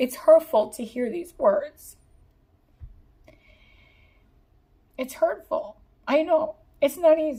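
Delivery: tearful, high-pitched speech through crying. Comforting viewers who feel hurt by someone leaving: crying while talking. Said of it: "I'm actually, like, crying in this pile".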